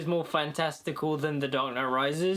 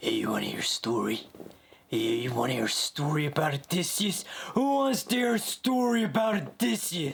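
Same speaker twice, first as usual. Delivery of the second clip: dramatic film-trailer announcer voice. Doing a movie trailer line as a Jon Bernthal impression. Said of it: "I want to do my uh, impression of John Bernthal".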